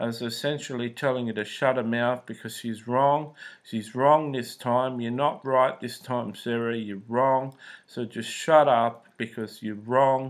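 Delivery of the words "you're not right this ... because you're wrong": ordinary talk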